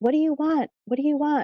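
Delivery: high, mock yell. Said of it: "my grandmother would be yelling".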